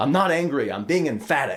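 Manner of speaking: mock pissed-off, irritated, insistent tone. Retelling what a boss said when pissed off: imitating a pissed-off boss. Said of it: "whenever he got pissed off".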